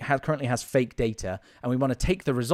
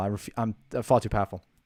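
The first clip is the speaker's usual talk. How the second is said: ordinary delivery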